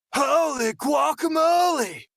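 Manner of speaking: very high cartoon turtle accent. Speaker demonstrates an accent from a childhood cartoon: Michelangelo accent. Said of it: "I've just turned down my gain here whilst I do this".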